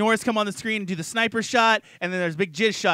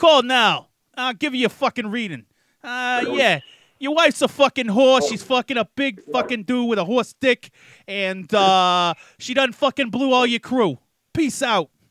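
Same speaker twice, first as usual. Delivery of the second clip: put-on New Jersey street-guy accent; 4 semitones higher, 4 dB louder than usual. Joking about giving readings to people who call in, New Jersey accent. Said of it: "I'll do it in a fucking Jersey accent too".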